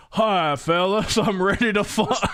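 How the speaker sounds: put-on comic fat guy voice. Quoting a woman who suddenly switches voice, in a Trey Parker fat guy voice. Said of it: "fat guy voice".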